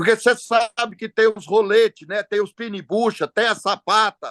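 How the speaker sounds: mocking tone. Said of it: "com deboche".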